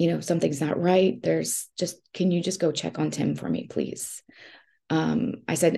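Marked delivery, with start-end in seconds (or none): 0.2-4.2 hushed stage whisper, kept down but voice present. Retelling a phone call to a neighbor from the car: retelling a half-whisper. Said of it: "I'm whispering to her".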